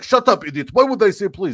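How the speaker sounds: put-on words spoken in a Middle Eastern accent. Retelling an argument with a man at a taxi stand, in a put-on Middle Eastern accent. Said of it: "That was supposed to be my Middle Eastern accent".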